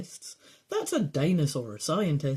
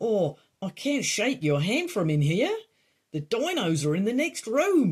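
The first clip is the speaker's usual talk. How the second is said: clumsy, bad put-on Australian accent; 3 semitones higher than usual. Voicing a speaker on top of the tank during a game playthrough, bad Australian accent. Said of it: "I'm so sorry to anyone Australian".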